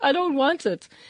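high, loud, crying, whining wail through tears.

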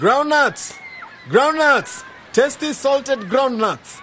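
high, loud, shouted street-seller cry. A boy selling groundnuts on the beach calls out to customers: shouting. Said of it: "you keep on shouting".

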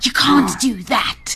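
cross, hissing, low-key hissed voice. Narrator voicing a kitten warning a dog off a girl: hissed. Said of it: "she hissed".

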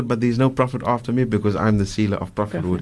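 ordinary talk

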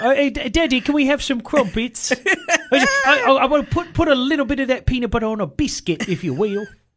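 very high, put-on little British kid voice. Joking that a young son now talks like a British kid; imitating a small British child. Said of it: "so he's a small British child now?".

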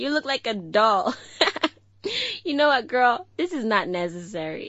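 swooping speech, giggling through the words. Teasing a friend about her makeup, laughing while talking. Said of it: "I can't stop myself from laughing".

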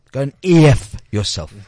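said loudly and clearly. Telling off the protesters at the sleep-out: loud and clear. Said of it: "I'm gonna say this very loud and clear".

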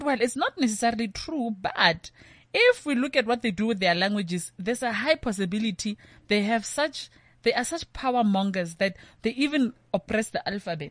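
plain

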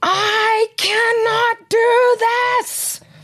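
very high, very slow, drawn-out wailing sobbing scream. Mother retelling breaking down after a child's meltdown: retelling a sobbing scream. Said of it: "I started bawling my eyes out and I screamed".

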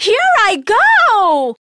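very high, loud, shrill, booming, joyful shout. Yulisa launches herself upwards into the sky with her magic map: joyful shout. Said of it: "She shouted joyfully".

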